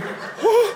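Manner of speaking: amazed, very high, laughing, gasped "whoa".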